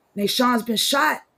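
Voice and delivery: high, sobbing scream, mock crying through tears. Retelling how a cousin called with bad news, imitating crying and screaming. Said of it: "she's just crying and screaming".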